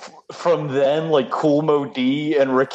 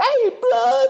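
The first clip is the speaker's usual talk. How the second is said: stock street-talk voice, pitched very high. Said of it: "that's how everybody talks".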